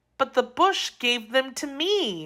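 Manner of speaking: timid, meek, nervous, soft voice. Daughter answering the old man who caught her eating his berries, meek, nervous voice. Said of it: "said in a meek, nervous voice".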